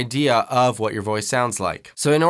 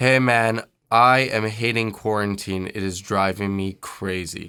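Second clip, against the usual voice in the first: dark, low tone with narrowed vowels; 4 semitones lower than usual. Voice lesson on shaping vowels: darker tone, narrow vowels. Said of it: "some narrow vowels as we do that ... there's a darker tonality just based on the way that I'm shaping my vowels".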